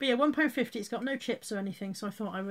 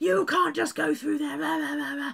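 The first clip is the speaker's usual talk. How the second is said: put-on loud, rough-edged, high shouting; 6 semitones higher, 5 dB louder than usual. Retelling how the gate attendant chased after and told off: imitating someone yelling. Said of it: "started yelling at me".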